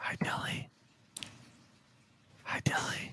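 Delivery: slow, drawn-out, very soft whisper. Greeting Dilly during a recorded conversation: whispering. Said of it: "you're just whispering into a recording".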